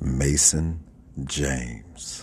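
radio host voice with long pauses. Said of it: "record in my radio voice".

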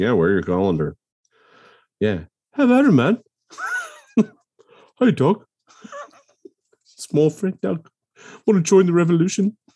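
put-on New Zealand accent. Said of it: "Now you're Teotihuacan?".

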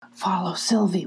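hushed whisper. Eric, freeing the prisoners from the cave, tells them in a whisper. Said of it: "whispered Eric".

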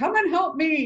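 high, frantic, panicked yell. Retelling how a panicked man yelled for women to come help, retelling a panicked yell. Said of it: "And he's yelling for women".

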